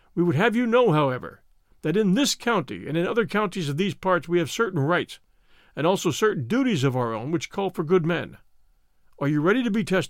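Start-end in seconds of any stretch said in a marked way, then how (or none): none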